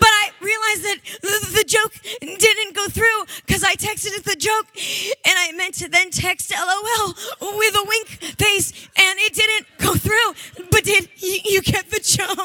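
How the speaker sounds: play-acted, high, tearful talking through crying. Retelling a woman who was crying about a text she sent, imitating her crying. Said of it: "Literally, she's crying".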